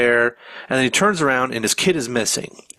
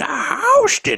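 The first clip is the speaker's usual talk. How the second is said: put-on motherly voice, much higher in pitch. Urging the other speaker to keep doing that voice, in a Sandy voice. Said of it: "you should do the rest of the episode in".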